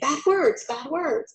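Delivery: aghast, appalled exclamation, words blurred into one. Speaker demonstrating expressive reading of an exclamation point, appalled exclamation. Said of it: "I'm not happy, I'm appalled".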